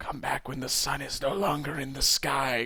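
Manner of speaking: croaking, rasping voice. Reading a story aloud, voicing a mysterious voice: croaking voice. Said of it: "croaked the voice".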